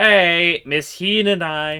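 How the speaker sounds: very slow, high, drawn-out yell. In a scene, a character calls out to Miss Hina, yelling a name. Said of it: "Don't yell like that".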